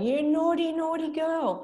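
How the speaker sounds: very high, shrill, furious yell. Retelling how mum scolded her as a child: imitating mum yelling. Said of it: "I remember she was yelling".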